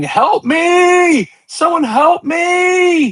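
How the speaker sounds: very high, very slow shrill cries, "me" stretched. Narrating a woman who drops her weapon and starts screaming for help. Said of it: "you hear her start screaming".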